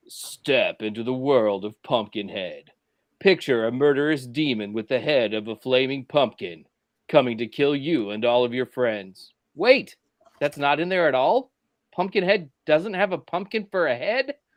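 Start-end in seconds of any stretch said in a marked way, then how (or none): 0.1-9.3 deep movie-trailer announcer narrating voice. Speaker performs a movie trailer they wrote for the group, deep announcer voice. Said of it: "Let me do the the deep announcer voice".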